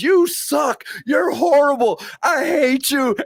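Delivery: shrill, very high child scream at full lungs, acted. Retelling a little girl booing a wrestler: imitating a child yelling at the top of her lungs. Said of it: "starts yelling to the top of her lungs".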